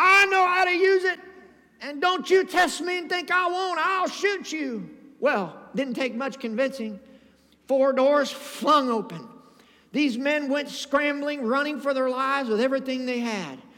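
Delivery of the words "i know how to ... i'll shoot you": acted, high shrieking little old lady voice. Retelling how a little old lady threatened the men in her car, retelling a screamed threat. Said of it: "She said".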